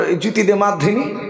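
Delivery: ordinary talk, nothing marked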